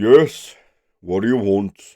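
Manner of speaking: loud, gruff, bellowed holler. Narrator voicing someone in the hole answering a traveler's shout: loud gruff holler. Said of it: "gruff voice holler back".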